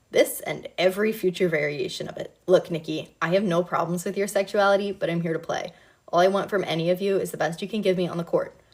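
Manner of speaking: ordinary delivery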